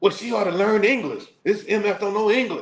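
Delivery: put-on very high, furious cussing tirade. Retelling a guest's complaint about the desk clerk: imitating an angry rant. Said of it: "he spent fifteen minutes cussing the lady out".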